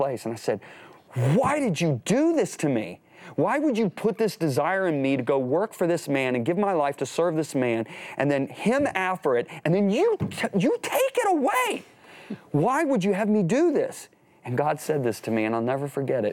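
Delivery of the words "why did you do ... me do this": furious yell at full volume, high and swooping. Retelling crying out to God alone in a remote place: imitating own angry scream. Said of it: "I screamed at the top of my voice".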